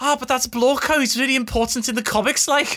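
put-on regional accent. Retelling what Michael always says about comic characters: imitating Michael's regional accent. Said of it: "just regional accent things".

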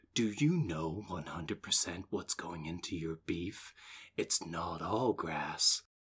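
dramatic, performed audition-reel style delivery. Asking a co-host where beef comes from: like an audition reel. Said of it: "it sounded like, like a reel for".

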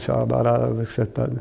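put-on muttering under the breath, mumbled. Retelling sitting in a recliner to pray: imitating muttering under breath. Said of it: "under my breath going".

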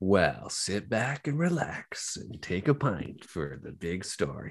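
acted slow, swooping radio announcer on-air delivery. A podcast host introduces the Father Gregory story, radio announcer voice. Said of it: "using my radio voice".

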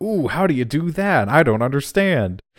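high, drawn-out, exaggerated gee-whiz amazement. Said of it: "it's a little bit too".

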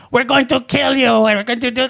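bad put-on German accent. Playing a pretend threat for a joke, apologizing that the accent is poor. bad german accent. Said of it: "I can't do a German accent".

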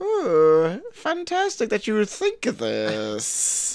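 put-on soft, hushed, swooping, sing-song, inquisitive German accent. Praising Will Forte's German character, Will Forte's inquisitive German accent. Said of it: "like this like inquisitive German accent where he's like".

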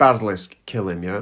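ordinary talk

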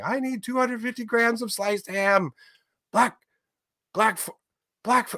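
put-on shrill, very high child's scream. Retelling a child at a deli counter ordering ham: imitating a child screaming. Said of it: "I can hear him screaming".

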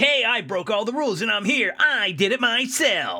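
put-on high-pitched cocky kid voice. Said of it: "he's like".

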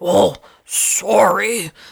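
creaky, raspy clown voice, sorry drawn out. Recounting an actor staying in character after knocking them down, Pennywise voice. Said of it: "in his best Pennywise voice".

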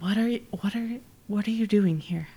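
half-whispered close, stumbling over the words. Voicing a mother who leans close and half-whispers in someone's ear: half-whispering in character. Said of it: "whispers in your ear".

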